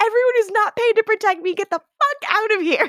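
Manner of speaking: frantic, very high-pitched shrieking scream. Retelling a frantic character's outburst: imitating a scream. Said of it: "she screams".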